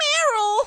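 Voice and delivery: very high, loud little creature voice, calling out. Voicing Azurill calling out to Meryl: Azurill's voice. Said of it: "Azuro's voice, on the other hand".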